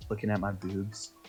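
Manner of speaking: whispering. As the elf, leaning close into another character's ear: whispering. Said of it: "the elf whispers into Rock's ear".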